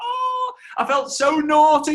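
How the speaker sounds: high, loud, slow thrilled squeal.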